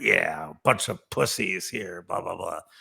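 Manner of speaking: put-on grizzled old trader character voice. Retelling what an old Wall Street floor trader said, imitating a grizzled old trader. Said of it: "this guy was just this grizzled floor trader".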